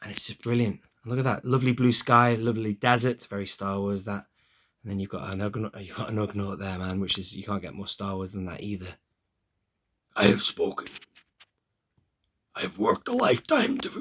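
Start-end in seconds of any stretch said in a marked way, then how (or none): 10.2-14.0 very high, poorly done voice. Quoting a Mandalorian scene while showing a figure: lame Kuiil impression. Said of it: "That's my lame impression".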